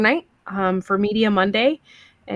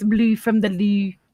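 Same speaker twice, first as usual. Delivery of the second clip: put-on French accent. Repeating a phrase for the group, joking: french voice. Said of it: "I can do it in a French voice".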